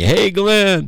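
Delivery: high, friendly called-out yell. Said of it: "they're yelling at me".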